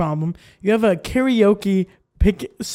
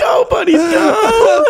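mock shrill, very high, loud shout; 13 semitones higher, 5 dB louder than usual. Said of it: "is that what you yell".

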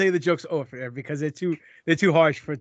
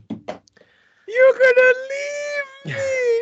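motherly voice, very high, very slow and drawn out; 6 dB louder than usual. Asking the other speaker, who may take a new job far away: imitating his mother. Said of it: "you sound like my mother right now".

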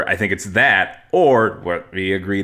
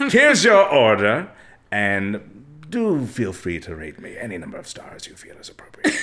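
put-on posh old butler accent. Acting out a caught delivery driver who suddenly speaks professionally: put-on old butler accent. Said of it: "Especially the accent".

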